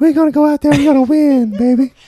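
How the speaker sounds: sweet voice pitched way up high. Recalling the Bears with another fan of his voice, speak as the player, imitating Walter's sweet voice. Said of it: "And that voice".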